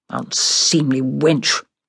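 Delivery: muttered, mumbling. A brother reacts to his sister after the servants leave, muttering. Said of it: "my brother muttered".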